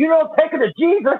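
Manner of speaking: put-on screaming, high. Retelling how a garden-center worker screamed at a man, retelling a scream. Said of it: "she's screaming at him".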